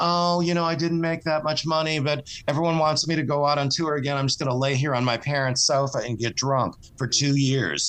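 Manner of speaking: normal talking voice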